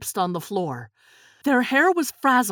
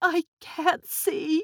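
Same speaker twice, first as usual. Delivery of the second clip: high, half-formed, frightened murmur; 6 semitones higher, 3 dB quieter than usual. As EMTs load her into an ambulance, [name] mumbles fearfully. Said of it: "[name] mumbled fearfully".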